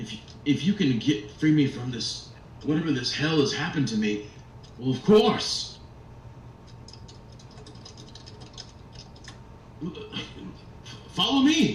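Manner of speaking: stammering, high, swooping wooden toy soldier voice. A toy soldier answers whether it knows the way to Krampus, as an awakened wooden toy soldier. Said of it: "another one of the toy soldiers. / And you see this wooden face kind of like like become quizzical for a moment. Yeah, are you here to save us? I I'm not sure what to. I, I just I just woke up just a".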